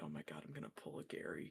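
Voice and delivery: whispered mutter under the breath, to oneself. Voicing a character about to start an arcade game: muttering under his breath. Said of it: "Ezra's just under his breath".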